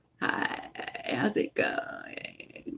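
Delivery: soft, breathy, creaky vocal fry, almost whispered. Explaining to listeners what vocal fry is, speaker demonstrates it with vocal fry. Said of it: "vocal fry?".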